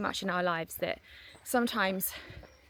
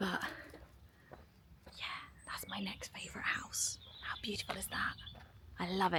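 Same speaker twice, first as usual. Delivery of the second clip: whispered, very soft, barely audible; 10 dB quieter than usual. Showing viewers a favourite house so people nearby can't hear: whispering. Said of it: "I'm whispering".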